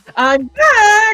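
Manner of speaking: put-on very high cartoon voice, "back" drawn out. Redoing a character voice after years away from it: Monokuma voice. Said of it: "I have to do this voice again? ... since I did Monokuma".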